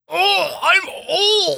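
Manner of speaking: very high, creaky, squeezed straining voice. Joking about old people, trying out a shitting voice. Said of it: "I was doing the shitting voice".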